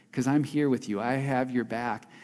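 tempting whisper. Voicing the flesh urging a listener to watch a show: whispering as the flesh. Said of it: "your flesh whispers to you".

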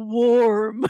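loud, drawn-out, stretched movie-star voice. Retelling a movie scene, saying the line in a Nicolas Cage voice. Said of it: "in a very Nicolas Cage voice".

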